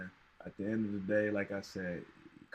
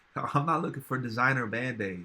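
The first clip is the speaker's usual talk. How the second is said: ordinary talk, nothing marked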